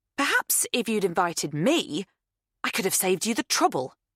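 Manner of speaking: withering, scathing, cutting tone. Reading fiction aloud, a character's retort to another: scathing. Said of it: "says Kate scathingly".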